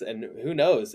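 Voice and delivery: ordinary talk, nothing marked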